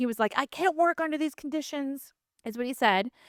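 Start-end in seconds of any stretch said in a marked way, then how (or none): 0.4-2.1 high, furious, angry yell. Retelling what a man yelled at Kelly, retelling an angry yell. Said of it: "he was yelling at Kelly".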